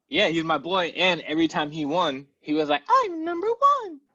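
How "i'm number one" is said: very high put-on character voice. Retelling what the character said every time he won: Toad voice. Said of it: "That's how he sounded".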